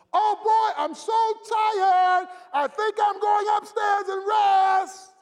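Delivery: very loud, very high voice, rest of words stretched. Retelling coming home as a boy, not wanting chores from mama: saying it loudly. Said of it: "I'd say with a loud voice".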